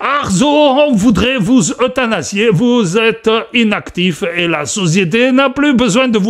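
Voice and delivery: fake German accent over French. Imagining someone at the door addressing Arzo, in a put-on German accent. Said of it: "je ne sais pas pourquoi je prends cet accent allemand".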